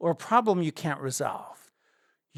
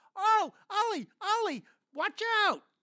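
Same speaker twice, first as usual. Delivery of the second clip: high-pitched screamed voice. Retelling a javelina attack on a walk, imitating the wife screaming. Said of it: "my wife is screaming".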